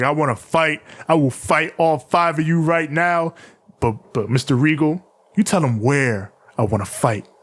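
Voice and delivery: ordinary talk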